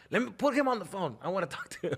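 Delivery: put-on demanding, insistent father voice, mild yell. Retelling a friend on the phone yelling at a teacher: imitating someone yelling. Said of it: "he's just yelling at the lady".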